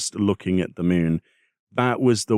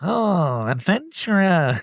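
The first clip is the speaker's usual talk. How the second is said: very high, pinched-nose nasal voice, called out; 11 semitones higher than usual. Voicing unvoiced cutscene dialogue, pinched-nose Beck Lug voice. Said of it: "I guess I'm pinching my nose then".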